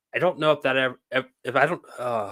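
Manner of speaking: stuttering, stammering, tripping over words. Speaker recalls a man's jail time and tether, stuttering. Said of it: "I'm stuttering".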